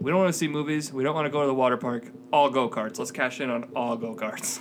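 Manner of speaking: ordinary talk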